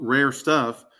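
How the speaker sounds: ordinary talk, nothing marked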